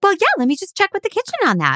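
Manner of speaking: very high, swooping sing-song customer-service voice. Retelling how they talked to rude patrons while waiting tables: imitating own high-pitched customer voice. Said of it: "the higher my voice would get".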